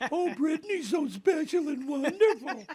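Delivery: very high, squeaky cartoon mouse voice. Retelling what a guy said about Brittany: imitating a guy's Mickey Mouse voice. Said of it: "he went up and used that voice".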